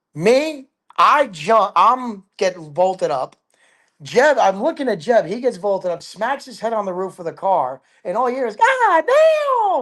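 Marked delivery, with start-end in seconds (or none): 8.6-9.8 very high squeak, "damn" stretched out. Retelling a friend hitting his head on the car roof, in Jeb's high squeaky voice. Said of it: "in that high, squeaky voice he does".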